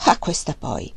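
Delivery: low, astonished, surprised exclamation. Narrator reads a man reacting to a woman's request, surprised exclamation. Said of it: "esclamò stupito".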